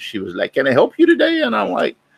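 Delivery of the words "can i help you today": put-on broken-English accent, very high voice. Retelling how the lady greeted him while he looked at watches, broken foreign accent. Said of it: "in her broken accent of whatever country".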